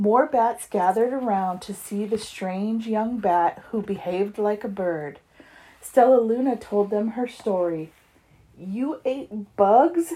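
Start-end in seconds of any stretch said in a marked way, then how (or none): 8.6-10.1 stuttered, higher and slower. One bat in the crowd, hearing Stella Luna's story, questions her, stuttered. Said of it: "stuttered one".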